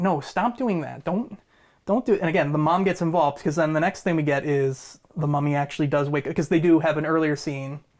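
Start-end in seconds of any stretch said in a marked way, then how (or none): 0.0-2.2 mock angry, furious telling-off tone. Retelling a movie scene where the mom scolds the sister: imitating a furious mom. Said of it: "mom is, like, furious".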